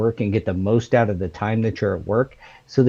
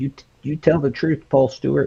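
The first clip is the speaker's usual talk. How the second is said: put-on voice sounding like an elderly schoolteacher; 4 semitones higher than usual. Imagining what your wife would say if watching: wife impression, old-teacher voice. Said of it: "just made her sound like like an old teacher".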